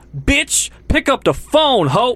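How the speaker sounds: put-on, shrill, high, loud, drawn-out yelling. Retelling a man in the grocery aisle yelling into his phone, imitating a yell. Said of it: "he's yelling into his phone".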